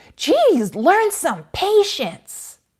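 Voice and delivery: very shrill, very loud, high, swooping, drawn-out yell. Retelling a mother scolding her small child: imitating a mother yelling.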